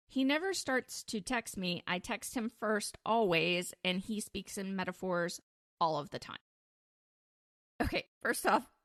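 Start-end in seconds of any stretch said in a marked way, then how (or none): none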